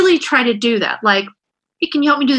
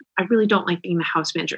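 calm, low, soft, even-tempered voice; 5 semitones lower, 7 dB quieter than usual. Showing how they now bring up house chores without yelling, acting out a calm voice. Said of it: "in a calm voice, no yelling".

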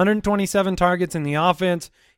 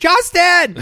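put-on scream, higher and louder; 13 semitones higher, 7 dB louder than usual. Imitating a running back yelling for the ball: imitating a player screaming. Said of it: "he just screamed".

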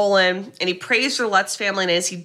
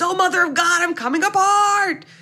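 mock, very high-pitched, screamed outburst; 10 semitones higher than usual. Retelling how a man woke by the fire and screamed, retelling a scream. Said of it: "he screams".

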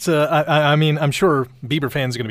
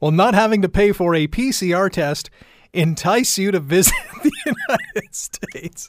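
giggling throughout with high, swooping pitch; 5 semitones higher than usual. Speaker reading out the day's Twitter poll question, laughing while talking. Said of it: "I'm laughing because Shona's still laughing".

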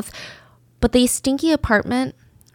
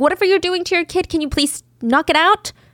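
high, fast pleading voice. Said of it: "He just wanted to ask".

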